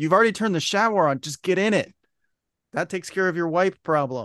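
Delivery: high-pitched, repeated yelling. The speaker retells what she kept yelling at him, retelling a yell. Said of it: "I kept yelling at him".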